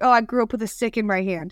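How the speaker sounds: ordinary talk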